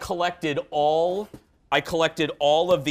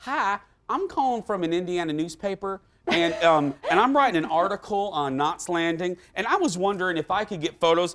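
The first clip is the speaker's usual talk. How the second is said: polite tone in a put-on Southern accent; 3 semitones higher than usual. Speaker reenacts childhood phone calls asking for publicity photos; Southern accent. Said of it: "I would do a, a Southern accent as a kid. I would be like".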